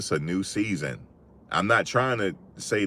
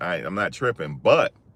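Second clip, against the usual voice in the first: usual speaking voice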